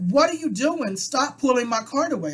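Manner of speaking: pointed, confrontational delivery. Retelling confronting a grocery store employee pulling the cart: retelling talking loud. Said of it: "I'm talking loud so, you know, people can hear it".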